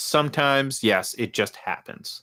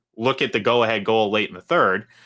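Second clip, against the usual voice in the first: ordinary talk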